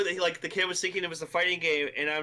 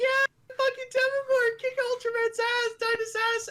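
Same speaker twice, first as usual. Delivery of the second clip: mock very high, shrill, rowdy children's cheering. Retelling what the kids shouted at the fight: imitating kids yelling.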